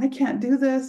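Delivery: put-on tearful sobbing, high-pitched crying. Retelling sitting at dinner with their husband, acting out crying. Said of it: "We're sitting there and I'm crying".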